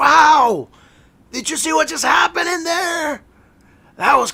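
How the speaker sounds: very loud, very high, excited shouting yell. A character looks at another character and speaks very loudly. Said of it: "looks at you very loudly and says".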